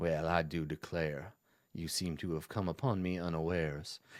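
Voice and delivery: put-on very low, hushed old Southern gentleman voice. Voicing Strahd as he is come upon unawares: Strahd as old southern gentleman. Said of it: "sounding like an old southern gentleman".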